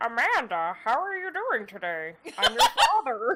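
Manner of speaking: made-up, swooping, animated dad voice. Retelling a voice given to a game's dream daddy: imitating own Manbot voice. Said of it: "that is now the Manbot voice".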